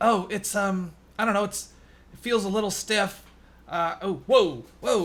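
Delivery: put-on clumsy, faked struggle. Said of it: "jerk it around a little bit to be like".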